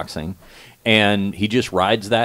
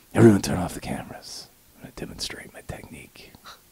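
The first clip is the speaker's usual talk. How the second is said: creepy, breathy, hushed whisper; 6 dB quieter than usual. Imitating Steven Seagal asking everyone to turn off the cameras: Steven Seagal creepy whisper. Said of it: "the creepy whisper voice".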